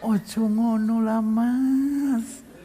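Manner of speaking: very soft, very slow, gentle, "mas" drawn out. Acting out how a Javanese person talks when angry: mock-gentle, very soft. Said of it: "kalau ngomong lebih lembut daripada kain sutra".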